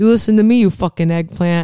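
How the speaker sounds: threatening, tough mob guy gangster voice. Quoting a line from a movie's mob character: imitating a mob guy. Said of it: "mob guy goes".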